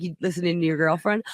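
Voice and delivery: ordinary delivery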